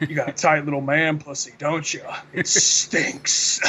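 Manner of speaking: creepy, deep voice. Retelling a show scene where Bugs Bunny corners Elmer Fudd, creepy deep Bugs Bunny voice. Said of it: "He has like a really creepy like deep voice".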